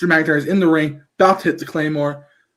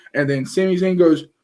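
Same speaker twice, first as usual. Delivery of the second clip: plain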